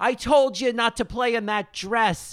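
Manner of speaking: very high-pitched shout. Retelling how Diane yells out the window at Amanda: imitating Diane yelling out a window. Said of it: "Diane yells out the window".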